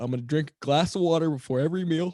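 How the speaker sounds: speaking through a yawn. Speaker explaining a small water-before-meals experiment, yawning while speaking. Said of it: "Sorry, I'm yawning right now".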